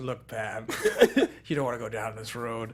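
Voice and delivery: low, laughing impression.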